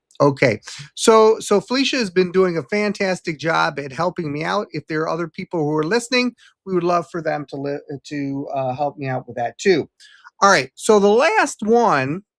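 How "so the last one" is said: voice cracking on the words, raised and slow. Host asking listeners for help, moving on to the last suggestion, voice cracking. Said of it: "as my voice cracks".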